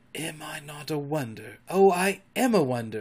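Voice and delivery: hushed whisper. Peter speaks to her, whispering. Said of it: "he whispered to her".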